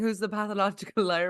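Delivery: ordinary talk, nothing marked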